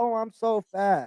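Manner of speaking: very slow, drawn-out complaining tone. Acting out a skinny girl looking in the mirror: imitating a skinny girl complaining. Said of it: "The skinny girl looking in the mirror like".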